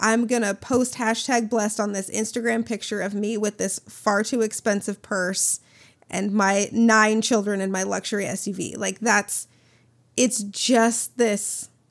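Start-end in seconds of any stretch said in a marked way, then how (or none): none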